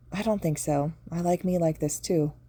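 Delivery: plain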